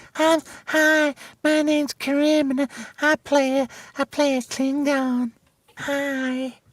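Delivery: very high, slow, drawn-out effeminate 'hi'. Imitating an actor from his social media: effeminate voice imitating Karim. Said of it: "He's very effeminate".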